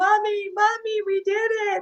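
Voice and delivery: put-on, very high cry through tears. After winning gold, calling up to their mom in the stands: retelling a tearful yell. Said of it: "I'm like".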